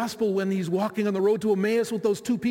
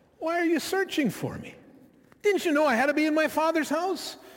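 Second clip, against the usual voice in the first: put-on sarcastic, indignant child voice, high pitch; 7 semitones higher than usual. Imagining the boy Jesus answering his parents, mock-sarcastic child Jesus. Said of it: "sarcastic even".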